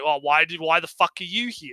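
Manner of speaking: put-on dismissive tone. Imitating the female knight speaking to the hero guy: imitating a dismissive tone. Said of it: "very dismissive of the hero guy".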